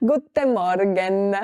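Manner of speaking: put-on thick Italian accent while speaking German. Imitating a german teacher who spoke with a heavy italian accent. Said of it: "con acento italiano heavy".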